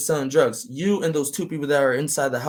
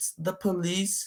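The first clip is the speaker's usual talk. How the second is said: put-on soft, small girlish voice; 4 semitones higher, 8 dB quieter than usual. Speaker retelling a cop knocking at a man's door, imitating cop's small girlish voice. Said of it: "said it with such a little low voice".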